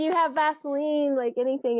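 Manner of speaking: play-acted yelling out, called out loudly. Retelling asking first aid volunteers for Vaseline; retelling a yell to volunteers. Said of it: "I'm yelling out to the to the volunteers".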